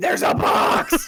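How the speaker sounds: yelling loudly and excitedly. Acting out a future yell while watching another player: mock yelling. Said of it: "And then I'll also yell too".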